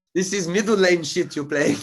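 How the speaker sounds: very high, shrill, loud, botched fake German accent. Retelling what a Porsche driver flashing its lights seemed to say, failed attempt at German accent. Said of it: "I don't know what accent that is".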